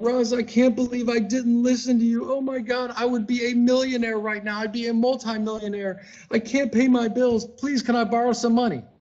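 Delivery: mock weepy pleading of a crying man, high and tearful. Speaker acts out grown men who came to him crying, imitating grown men crying. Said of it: "grown men crying".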